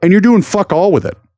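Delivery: annoyed, angry, heated rant with swooping delivery. Speaking to an audience, angry tone. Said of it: "you could tell that by the tone in my voice".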